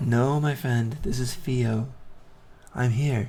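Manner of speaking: soothing, comforting tone. Voicing a healing deity who speaks to a player: warm, comforting voice. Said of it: "you sense his warm, comforting voice".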